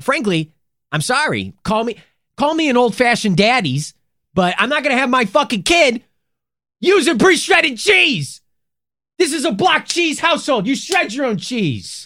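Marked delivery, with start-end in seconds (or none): 1.6-12.1 very high, loud, worked-up, fired-up rant. Ranting about store-bought cheese in a comedy bit: fired-up rant. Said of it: "I'm getting fired up about this".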